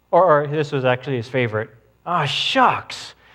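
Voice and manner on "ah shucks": acted-out startled, taken-aback little exclamation. Speaker retells what a man would say to naughty kids, imitating a surprised voice. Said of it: "he would say it with such surprise in his voice".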